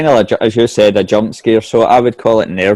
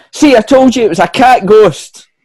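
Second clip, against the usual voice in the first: very high-pitched, shrill yelling shout; 12 semitones higher, 4 dB louder than usual. Storyteller giving Tony's line after the others scream, shouting. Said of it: "And Tony shouts".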